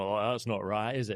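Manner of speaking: put-on Northern English accent. Retelling how men in a pub reacted to women coming in, in a Northern English accent. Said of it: "that was a Northern accent".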